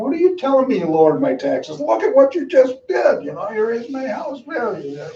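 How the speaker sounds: shrill, very high, swooping outraged angry screaming. Retelling how taxpayers came in complaining about raised assessments: imitating screaming taxpayers.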